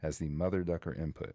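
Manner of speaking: normal talking voice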